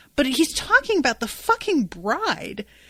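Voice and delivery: ordinary delivery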